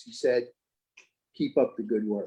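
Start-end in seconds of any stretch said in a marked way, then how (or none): 1.4-2.3 very low, quiet, under the breath. Recalling a judge who walked up to the speaker, quoting him sotto voce, very low. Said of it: "in sotto voce, very low voice".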